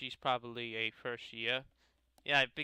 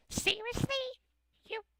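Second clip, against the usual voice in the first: put-on, very high, grating, annoying girl voice. Voicing a girl welcoming someone to the Literature Club, in an annoying girl voice. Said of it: "I want to give kind of like an annoying voice".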